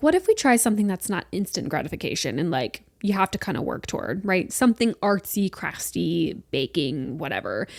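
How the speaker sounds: ordinary talk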